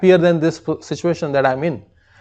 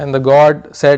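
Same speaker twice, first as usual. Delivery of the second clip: ordinary talk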